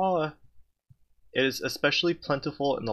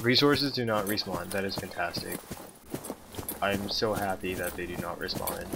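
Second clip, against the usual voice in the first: flat, deadpan, fake and sarcastic joy. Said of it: "Can you hear the joy in my voice?".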